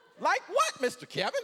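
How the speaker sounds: very high cartoon-character voice. Retelling how the daughter's date greeted him: imitating a cartoon-character voice. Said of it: "Like a freaking cartoon character".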